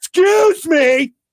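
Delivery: loud drawn-out yell.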